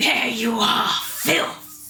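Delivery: furious female dragon voice, slow and rage-filled. Game narrator voicing a colossal second dragon attacking: rageful feminine voice. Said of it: "a rageful feminine voice rockets through the air".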